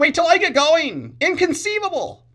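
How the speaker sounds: very high, loud, swooping whine. Quoting Wallace Shawn from Princess Bride: whiny Wallace Shawn voice. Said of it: "he has kind of a whiny voice".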